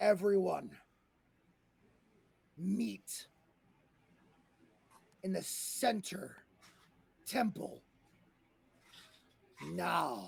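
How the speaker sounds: ominous, menacing, commanding, booming tone. Voicing a voice everybody hears, calling people to the temple: loud, booming, menacing voice. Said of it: "a loud, booming, menacing voice that says".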